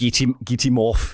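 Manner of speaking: put-on South African accent. Retelling what a hockey coach said: south african accent. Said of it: "That's my South African accent".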